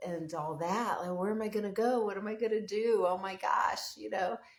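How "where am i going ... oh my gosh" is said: put-on frantic, worried, panicked fretting. Retelling how a tenant reacted to losing her home: imitating someone panicking. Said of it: "she was really panicking".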